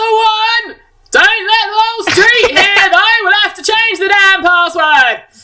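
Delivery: shouting at matching pitch. Voicing a doorkeeper who answers a shouted password: shouting back at the same pitch. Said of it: "matches your own pitch exactly".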